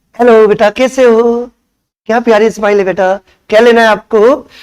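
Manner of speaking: sugary, honeyed, welcoming sweet-talking tone. Describing how some shopkeepers greet customers: imitating a sweet-talking shopkeeper. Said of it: "कुछ इतना मीठा बोलते हैं".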